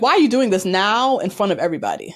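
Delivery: pissed-off, accusing, angry outburst with swooping pitch. Retelling how she got pissed at him in front of everybody: imitating someone angry. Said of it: "she gets pissed 'cause she's like".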